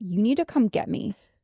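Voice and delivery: put-on furious, insistent anger. Speaker retells calling her mom from the school office, retelling an angry demand. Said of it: "I was like that angry".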